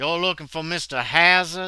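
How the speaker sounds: put-on thick Southern accent. Voicing a father character asking about someone: thick southern accent. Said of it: "very thick accent, Southern accent".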